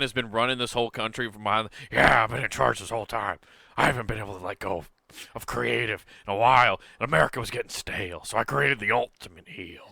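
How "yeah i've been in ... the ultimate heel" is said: put-on gravelly old man voice. Joking that Vince McMahon runs the country: Vince McMahon impression. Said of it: "doing a Vince McMahon".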